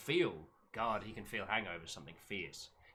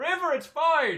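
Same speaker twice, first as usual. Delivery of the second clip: piercing yell, very high and very loud; 15 dB louder than usual. Breaking off from describing a character to call to river: shouting. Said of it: "I had to shout the other voices".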